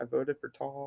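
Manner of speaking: very soft, unhappy grumble under the breath. Retelling how Jeremy cast his vote: imitating Jeremy muttering under his breath unhappily. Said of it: "under his breath and, like, not happy at all".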